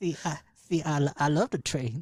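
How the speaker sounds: fake lisping voice. Doing a persona others call better than the actual Lonnie: put-on lisp. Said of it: "Talking with a lisp and a limp wrist".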